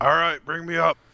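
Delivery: very high, loud yelling call. Playing a character calling up an elevator shaft: yelling up the shaft.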